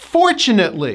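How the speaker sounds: fortunately with emphasis on first syllable FOR. Modeling a word's pronunciation for video viewers, stress on for in fortunately. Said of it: "The first syllable gets the stress".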